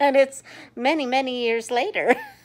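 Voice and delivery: high-pitched, put-on Southern accent. Recalling playing Annelle in a play, still using that voice: Annelle's put-on Southern accent. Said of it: "I talk like this".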